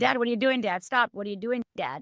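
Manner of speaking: ordinary talk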